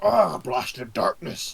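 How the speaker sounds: gruff, creaky monster growl, held back, drawn out. Voicing a troll stepping out of the darkness: roaring troll voice. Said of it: "it roars and goes".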